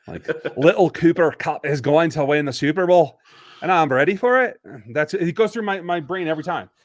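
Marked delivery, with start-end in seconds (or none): 0.5-4.6 loud put-on Scottish accent slid into. Reacting to a player's name, the speaker slides into a put-on Scottish accent. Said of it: "sliding into a Scottish accent".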